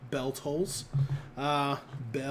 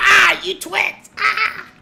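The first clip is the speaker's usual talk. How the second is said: put-on villain shriek, higher and louder; 10 dB louder than usual. Joking about releasing the twits: Rita Repulsa voice. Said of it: "My Rita Repulsa sounds more like Sam Kinison".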